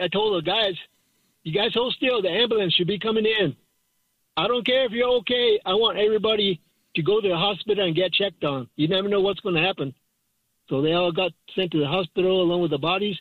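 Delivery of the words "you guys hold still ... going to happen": ordinary talk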